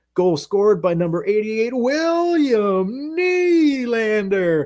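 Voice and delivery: mock, very high, pumped-up arena announcer call. Show how the announcer normally calls a goal when not at away games, imitating a hyped goal announcer. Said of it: "hyped about announcing the goals".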